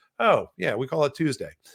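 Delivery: normal talking voice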